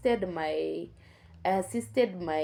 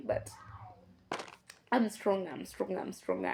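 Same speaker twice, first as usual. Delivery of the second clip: voice close to crying, on the verge of tears; 5 dB quieter than usual. Speaker telling their own story, still not feeling healed, on the verge of tears. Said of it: "I feel like I want to cry".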